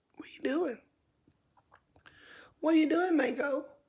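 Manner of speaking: put-on high, sing-song, cooing baby talk.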